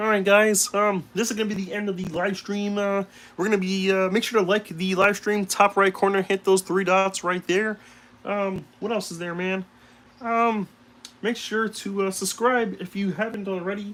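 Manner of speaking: cartoon frog voice. Ending your live stream, you remember the voice you forgot to do: Kermit the Frog voice. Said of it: "I forgot to do my uh, Kermit the Frog voice".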